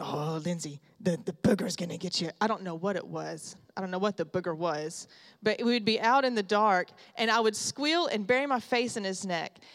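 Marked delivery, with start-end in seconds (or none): 0.0-2.3 rough growl, deliberately bad, clumsily done. Retelling a grandfather scaring a child at night: imitating Papa Bill growling. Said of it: "I'm gonna butcher this im-, impression of him".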